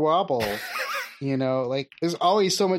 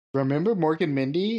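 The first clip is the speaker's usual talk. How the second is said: put-on Dutch accent bending the English. Voicing Dutch people, in a Dutch accent. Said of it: "that's my Dutch accent".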